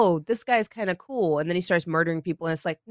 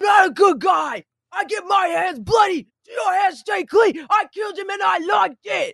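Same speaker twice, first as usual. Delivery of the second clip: mock very high, slow, grudging, begrudging yell; 13 semitones higher, 5 dB louder than usual. Imitating an actor's delivery of every line: Punisher voice yelling begrudgingly. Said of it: "yelling it begrudgingly at somebody".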